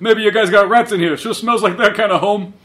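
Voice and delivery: put-on loud, quick old-timer voice. Retelling a scene where Cisco talks smack, old man voice. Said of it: "talking smack in the old man voice".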